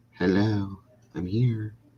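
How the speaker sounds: small, weak, mousy little voice. Picturing how she comes in and says hello: Molly's mousy little voice. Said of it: "in her mousy little voice".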